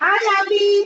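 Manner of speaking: eager, excited voice. Greeting someone joining a call on a holiday, excited. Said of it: "you sound excited".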